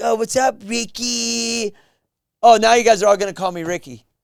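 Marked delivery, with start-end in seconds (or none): 0.0-1.7 very slow, high, patronizing, condescending voice. Acting out how others greet him, a mock-condescending greeting. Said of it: "like it's condescending".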